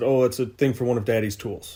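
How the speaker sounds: plain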